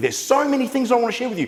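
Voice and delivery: very high, rushed, rattled-off quick-fire delivery. Demonstrating how tonality affects listeners, talking really quickly. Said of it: "and I'm talking really quickly".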